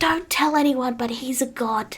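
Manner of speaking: whispered delivery. Voicing a character who leans over to share a secret: whispering. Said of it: "leans over and whispers".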